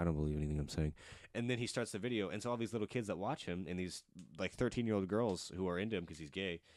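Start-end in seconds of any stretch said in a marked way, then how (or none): 0.0-0.9 mock whisper under the breath, lower. Retelling how a video disclaimer is said: Shane Dawson whispering. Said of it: "whispers it under his breath".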